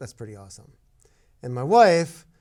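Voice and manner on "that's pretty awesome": very quiet, low mutter under the breath. Retelling a remark about a passing Ferrari: said under the breath. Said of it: "I kinda under my breath say".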